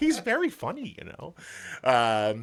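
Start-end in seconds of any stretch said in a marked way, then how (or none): 0.0-1.0 put-on very high, sweet little old-lady voice. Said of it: "She just looks up at me all sweet".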